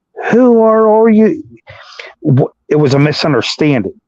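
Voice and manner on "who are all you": acted yelling, pushed very high and shrill. Retelling a man yelling as two detectives arrive: retelling a yell. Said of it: "And he starts yelling".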